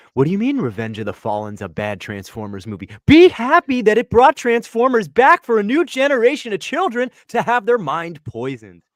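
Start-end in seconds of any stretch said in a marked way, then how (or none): none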